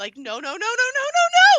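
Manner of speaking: very loud, very high, swooping, drawn-out screams. Retelling how she just started screaming: retelling her screaming. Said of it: "She just starts screaming".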